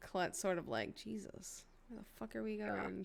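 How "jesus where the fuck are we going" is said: mumbled, muttered under the breath, quieter. Voicing a character as she pulls the car away: muttered under her breath. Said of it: "under her breath".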